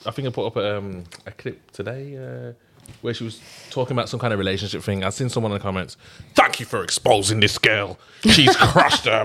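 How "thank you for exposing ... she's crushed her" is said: fake, mock-grumpy old man voice. Reading out a viewer's comment on a clip, in a put-on grumpy old man voice. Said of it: "what's with the grumpy old man voice every time?".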